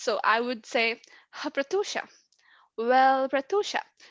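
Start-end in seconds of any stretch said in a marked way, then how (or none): 2.8-3.8 "well" merged straight into the next word. Stuttering technique merging words before the feared word: 'well' merged into 'Pratusha'. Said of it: "I'm not giving breaks in between. I'm just saying it".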